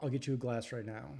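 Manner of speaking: ordinary talk, nothing marked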